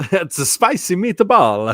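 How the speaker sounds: exaggerated bad fake Italian accent. Redoing the spicy meatball line for the full bit, bad Italian accent. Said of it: "say it with the bad Italian accent".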